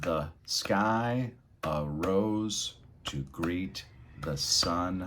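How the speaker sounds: very slow, each syllable solid, "sky" stretched. Showing dynamic reading focused on syllables: every syllable clear and solid. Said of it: "Hear every section sounding clear and solid".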